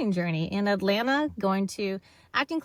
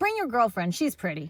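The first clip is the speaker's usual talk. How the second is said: ordinary talk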